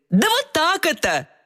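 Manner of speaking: playful teasing mimicry. Narrator reads the soft sign answering the letter Y, cheerfully mimicking her. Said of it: "Весело передразнил ее мягкий знак".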